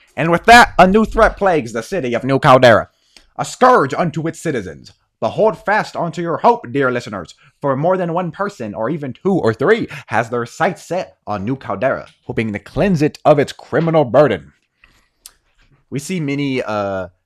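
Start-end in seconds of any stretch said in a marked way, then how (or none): 0.2-14.5 put-on loud, old-fashioned radio serial narrator voice. Narrating the story as the camera pans up, in an old timey narrator voice. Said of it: "we hear a old timey narrator's voice".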